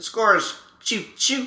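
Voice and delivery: put-on Baltimore accent. Imitating how the announcer calls the score, do a Buck Martinez impression. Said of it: "the Baltimore accent?".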